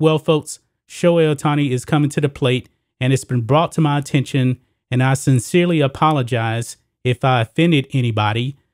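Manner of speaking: ordinary talk, nothing marked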